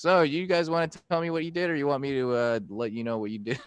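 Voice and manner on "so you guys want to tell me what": plain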